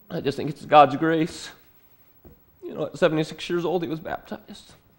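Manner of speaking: choked-up voice. Telling a family story about a baptism, getting emotional. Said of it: "I'm known to get a little emotional".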